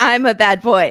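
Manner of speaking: put-on French accent. Mocking someone who claims to be a bad boy, in a French accent. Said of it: "in my French little accent".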